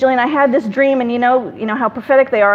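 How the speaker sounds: plain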